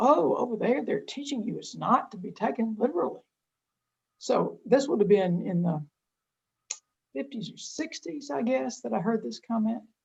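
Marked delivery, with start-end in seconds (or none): 0.0-3.2 mock aghast, scandalized, horrified, appalled dismay. Recalling the speaker's mother's comment, imitating a horrified voice. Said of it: "in sort of a horrified voice".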